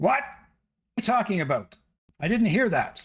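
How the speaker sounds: loud, high calling out. Voicing a guard answering another guard: shouting across. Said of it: "he sort of shouts over to his left".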